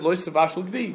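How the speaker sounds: normal talking voice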